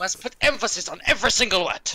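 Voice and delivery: heavy put-on German accent. Showing what the german accent sounds like, in an exaggerated german accent. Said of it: "This is this is the German accent".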